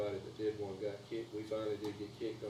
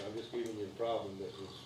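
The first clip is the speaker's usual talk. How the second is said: usual speaking voice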